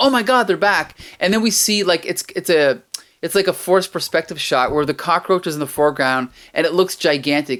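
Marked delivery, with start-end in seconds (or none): 0.0-0.9 play-acted light, high-pitched mild half-scream. Retelling a comic character's line about cockroaches: imitating a scream. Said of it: "she screams".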